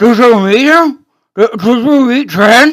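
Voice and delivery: muffled speech through mouthful. Game narrator voices a Khajiit asking the players a question, talking through gauze. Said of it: "through the gauze in his mouth".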